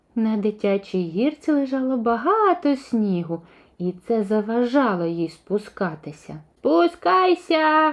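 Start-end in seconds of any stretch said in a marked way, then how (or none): 6.6-7.9 high-pitched yell, called out. Narrator reads a freezing raven calling to a cow on a slide, shouting. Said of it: "закричав ворон".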